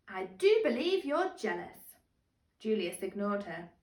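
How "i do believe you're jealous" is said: smooth, rich, milky cooing voice. Reading a story aloud, voice the reply to Julius in Jasmine's cooing milky voice. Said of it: "cooed Jasmine in her milky voice".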